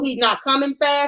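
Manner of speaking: plain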